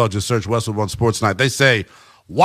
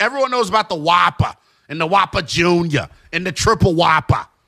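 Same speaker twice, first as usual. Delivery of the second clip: cool-sounding put-on Boston accent, pitched up; 6 semitones higher than usual. Praising Burger King's breakfast, the speaker slips into a Boston Linnell voice. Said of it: "I just like using that cool accent".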